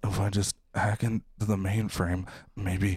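flat, weird, dead-even monotone. Doing an impression for others to guess: Rami Malek as Mr. Robot impression. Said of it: "Mister Robot".

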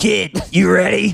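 rough, gruff talking-dog voice. Asked to do a Frank the Pug voice, the speaker tries it: Frank the Pug voice. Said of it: "Can you do a Frank the Pug voice".

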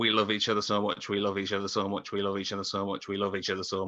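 ordinary talk, nothing marked

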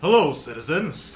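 very loud, bold character voice. The podcast guest, just introduced, speaks in his Revo Ranger voice. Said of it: "I love the voice".

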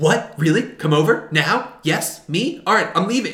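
thrilled, excited, can't-believe-it eagerness. Retelling how an eager character reacts to an invitation: imitating someone excited. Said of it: "he gets so excited".

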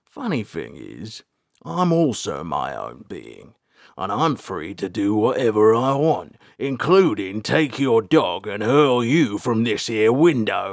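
slow, drawn-out growl, pitch climbing. Narrator reads Gristleback's reply in a tense exchange, growled. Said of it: "Gristleback growled".

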